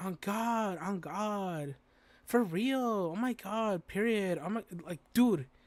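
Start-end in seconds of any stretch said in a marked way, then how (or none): 0.0-4.4 very slow, grating, annoying slangy drawl. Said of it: "those annoying ass bitches that would be like".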